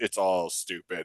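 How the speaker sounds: quiet mumble under the breath, muttered aside. Retelling what the grocer said while bagging groceries: imitating someone muttering under breath. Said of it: "right under her breath".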